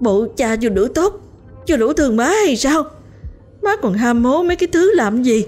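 shaking with rage. Turning to question their mother after shouting, voice trembling with anger. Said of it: "giọng run lên vì giận".

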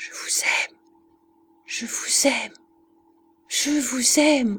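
whispered and panting, very close to the mic. Walking behind Christiane on the path, a voice speaks close to her ear, panting. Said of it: "une voix haletante qui lui disait, presque dans l'oreille".

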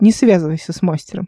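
plain reading voice

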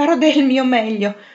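panting, holding back laughter. Anna replies while fighting back a strong urge to laugh, panting, holding back laughter. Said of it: "ansimò Anna, ricacciando indietro una gran voglia di ridere".

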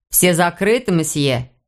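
plain

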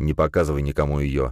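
plain reading voice

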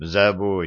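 ordinary delivery

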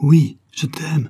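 crying out. A man answers the tsarina's question, crying out. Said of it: "s'écria Blodine".

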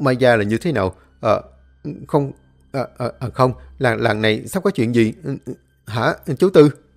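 trembling, frightened stammering. A frightened man, pale, questions old tư; trembling, stammering question. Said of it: "tái mặt run run hỏi ông Tư".

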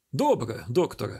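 plain

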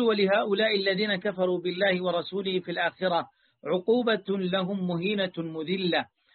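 ordinary delivery

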